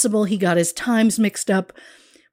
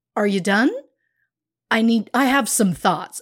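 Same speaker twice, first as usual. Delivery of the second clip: mock-annoyed put-on tone. Acting out an imagined self on a throne, mock-annoyed. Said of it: "being very annoyed".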